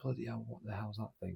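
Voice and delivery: put-on broad, thick Yorkshire accent, soft. Retelling Dad's reaction while both stared at the things, in a thick Yorkshire accent. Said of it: "Like in a thick Yorkshire accent".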